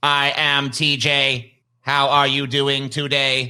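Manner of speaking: flat, monotone, mechanical robot voice. Teasing another speaker about sounding like a robot, robot-like TJ imitation. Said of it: "You sound like this".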